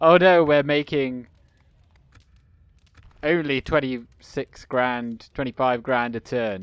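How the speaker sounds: ordinary delivery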